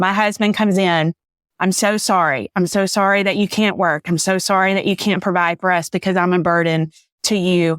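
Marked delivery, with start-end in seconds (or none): 1.6-7.8 tearful, crying speech. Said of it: "I'm crying".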